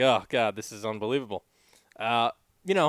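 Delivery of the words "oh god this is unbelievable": normal talking voice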